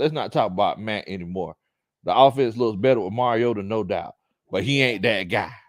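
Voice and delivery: ordinary talk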